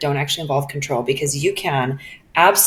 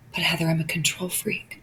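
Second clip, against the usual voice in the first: put-on quiet, shameful whisper, even quieter; 8 dB quieter than usual. Retelling what people confess when asked about delegating: imitating a quiet shameful whisper. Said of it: "a quiet whisper, lean in a little bit closer in this shameful confession".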